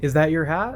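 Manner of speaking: upward inflection, pitch rising at the end on hat. Explaining that questions are marked just by an upward inflection on hat. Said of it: "We just do an upward inflection".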